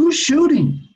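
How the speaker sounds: eager, excited, very high-pitched voice. A man hears of trouble and asks who is shooting: excited. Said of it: "Excited, I asked".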